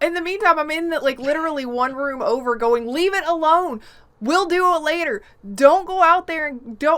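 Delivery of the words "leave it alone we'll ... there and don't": put-on yelling, higher and louder. Retelling what was said from the next room: retelling a yell. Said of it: "I'm yelling at him".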